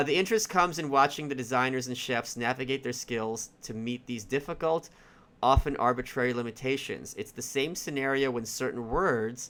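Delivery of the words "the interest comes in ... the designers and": plain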